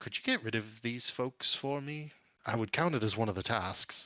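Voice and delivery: gentle, mild, unpushy tone. Voicing a character's request over an intercom: soft voice. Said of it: "softly say".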